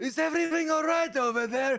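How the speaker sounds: very high, shrill scream. Game narrator voices a character calling out amid a commotion, screaming. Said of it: "you hear Baptiste screaming like".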